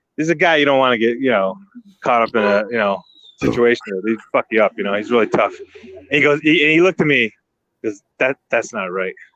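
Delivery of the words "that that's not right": put-on annoyed, angry tone, lower pitch. Retelling a tough friend's reaction to a story: imitating someone annoyed. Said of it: "he was kinda pissed when he said it".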